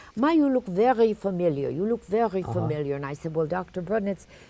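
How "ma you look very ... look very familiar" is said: put-on German accent. Retelling a doctor's greeting at a visit: imitating Doctor Brudnitz's German accent. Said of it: "he had a typical German accent".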